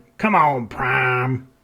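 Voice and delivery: drawn-out, southern-drawl robot voice. Showing an impression of a favorite character with a southern drawl: Ironhide impression with southern drawl. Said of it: "that's the best I've got".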